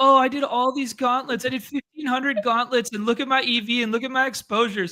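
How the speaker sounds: high, mock crying whine. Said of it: "These guys are gonna be crying".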